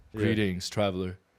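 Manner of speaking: put-on deep, otherworldly ghost voice. Imagining meeting a ghost at the top of a mountain: put-on deep voice. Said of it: "with the deep voice and".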